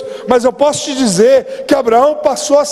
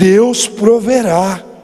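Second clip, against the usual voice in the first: low, mock choked-up voice, catching; 5 semitones lower than usual. The speaker imagines a father answering his son on the way up a hill: imitating a choked-up voice. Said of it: "com a voz embargada".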